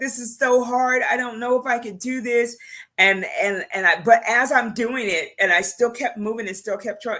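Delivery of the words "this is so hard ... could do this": high, tearful, acted crying, words through sobs. The speaker recalls praying while clearing the house, retelling own crying. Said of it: "I'm crying because I was like".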